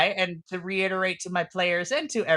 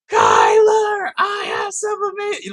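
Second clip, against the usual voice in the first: put-on screaming voice; 8 dB louder than usual. Voicing a character calling another on the phone: imitating q screaming. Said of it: "Q is full-blown screaming into this phone".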